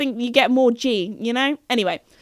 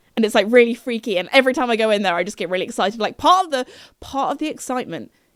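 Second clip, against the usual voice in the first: plain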